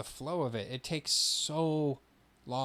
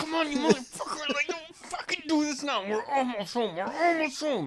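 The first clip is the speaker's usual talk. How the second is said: play-acted, very high, loud, mad, fed-up outburst; 5 dB louder than usual. Retelling racing home to the bathroom: imitating getting mad. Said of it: "do you ever get mad?".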